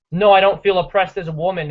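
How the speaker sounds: ordinary talk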